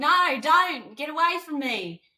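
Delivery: put-on laid-on broad Australian accent, very high. Recalling being asked to be really Australian, speaking in a really Australian accent. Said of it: "he wanted me to be really Australian".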